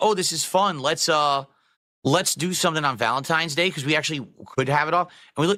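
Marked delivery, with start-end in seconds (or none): none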